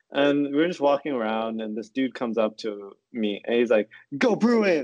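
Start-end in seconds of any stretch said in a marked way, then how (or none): 4.1-4.8 mock sudden booming sports cheer, high and shouted. Retelling a stranger at Costco cheering at them: imitating a loud shout. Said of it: "he said it really loud".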